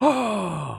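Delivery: exasperated, breathy put-on voice. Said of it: "the breathy exasperation".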